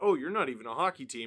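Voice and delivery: ordinary talk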